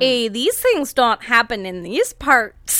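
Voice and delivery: Minnesotan accent. Trying out an accent in conversation, the speaker does a put-on Canadian-Minnesotan accent. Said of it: "That was it Irish?".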